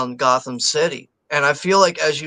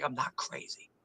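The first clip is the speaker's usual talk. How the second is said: mock offhand, breathy, hushed near-whisper; 18 dB quieter than usual. Retelling a movie character's reply from the scene: imitating a nonchalant line. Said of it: "says it, like, so nonchalant".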